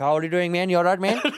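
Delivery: put-on Indian accent, kept up throughout. Recalling joking around with a friend in the back: put-on Indian accent. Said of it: "in that Indian accent that we do".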